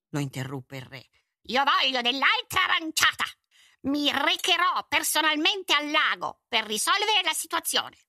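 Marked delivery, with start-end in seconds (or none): 1.4-7.8 furious, loud, thundering roar. Narrator reads the king cutting off a man reporting the water shortage: thundering, furious. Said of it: "Tuonò. Era veramente furioso".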